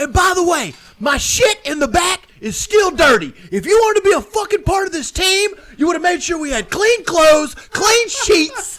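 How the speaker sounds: very high, loud, drawn-out furious railing. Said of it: "when he gets done railing him on that".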